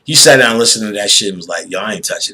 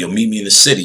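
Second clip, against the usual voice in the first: mock snide delivery. Retelling what a producer said about meeting up: imitating a snide remark. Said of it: "He would say it like snide".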